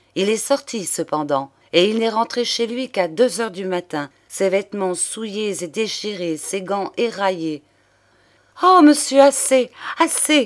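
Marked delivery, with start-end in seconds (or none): 8.6-10.4 sudden, happy, joyful, loud cry. Claire cuts off the man speaking to her, interrupting with sudden joy. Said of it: "interrompit Claire, dont les yeux rayonnèrent tout d'un coup de bonheur".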